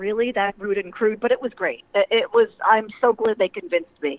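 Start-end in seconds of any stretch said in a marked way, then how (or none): none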